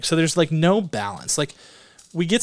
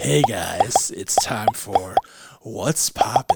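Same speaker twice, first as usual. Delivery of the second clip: put-on 1970s DJ voice, much lower; 6 semitones lower than usual. Opening a segment of the show with a co-host, in a 1970s radio DJ voice. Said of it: "Is that what a 70s DJ sounds like".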